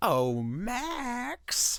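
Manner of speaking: very slow, drawn-out storybook villain voice, swooping up high. Showing a quiz partner an impression of the Grinch: Grinch voice. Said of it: "I was doing an impression of the Grinch".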